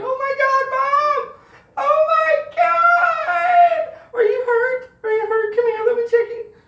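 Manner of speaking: very high, loud wailing and bawling through tears. Acting out checking on your mom after hearing a crash, retelling bawling. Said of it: "I'm bawling like".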